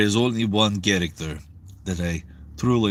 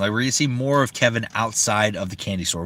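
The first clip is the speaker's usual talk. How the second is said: plain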